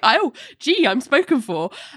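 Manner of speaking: acted-out, befuddled, squirming, high, flustered voice. Retelling a man pulling away from a kiss: imitating a protest.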